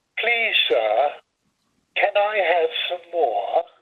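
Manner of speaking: put-on English accent, a best attempt. Retelling his reply to a man, in his best English accent. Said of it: "in my best English accent".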